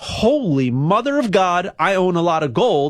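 ordinary delivery

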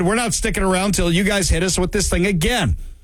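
ordinary talk, nothing marked

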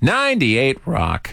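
voice cracking and breaking mid-phrase. Announcing the station name before taking calls: voice cracking. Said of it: "my voice just cracked there".

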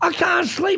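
play-acted, high, worked-up yelling. Retelling how he yelled about the fireworks going off, retelling someone yelling. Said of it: "he's yelling at the top of his head".

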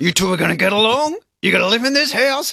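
clenched-teeth delivery. Retelling what Paul said to two fighting dogs, through gritted teeth. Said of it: "He's talking through his teeth".

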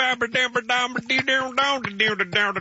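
mock thick Southern mumble, high and garbled.

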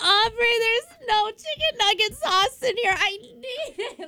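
put-on, very high, tearful sobbing. Retelling calling a best friend about missing sauce: retelling own crying plea.

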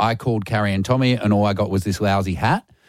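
plain

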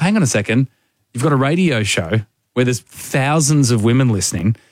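plain

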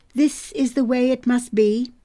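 ordinary delivery

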